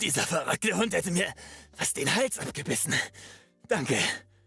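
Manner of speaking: a bit of a gargle in the throat. Trying out a line for a game character, speaking with a slight gargle. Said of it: "But let's do one gargling a bit".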